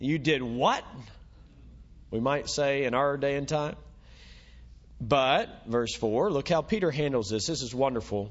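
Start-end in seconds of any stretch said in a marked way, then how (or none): 0.0-0.8 put-on disapproving tone, slower. Preaching on a scripture passage, the speaker voices the critics in mock disapproval. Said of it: "Can you hear the disapproval in their voice?".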